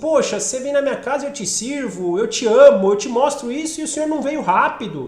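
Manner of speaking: demanding, insistent voice. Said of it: "parece me querer barganhar algo".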